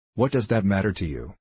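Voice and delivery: ordinary delivery, nothing marked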